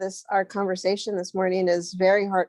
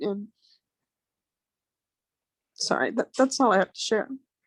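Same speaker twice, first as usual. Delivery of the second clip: teary, tearful, emotional delivery. Wrapping up a share after a morning conversation that touched her heart, tearful. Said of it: "don't know where all these tears and emotion came from".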